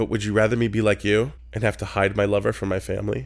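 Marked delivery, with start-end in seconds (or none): none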